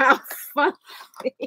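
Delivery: breathy, half-whispered words through laughter. Laughing at herself after a silly voice: laughing while talking. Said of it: "I'm laughing at myself right now".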